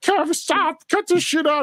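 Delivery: shrill, very high screaming shout. Retelling how employees reacted to the elevator prank: imitating people screaming. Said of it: "the people would be screaming at him".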